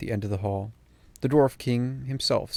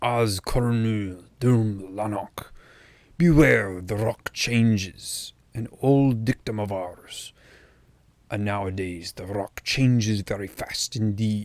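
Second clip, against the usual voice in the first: slow, guttural king voice, held in the throat. Reading a novel aloud, the king addresses Aragorn: Hrothgar's guttural voice. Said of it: "then said gut gutturally".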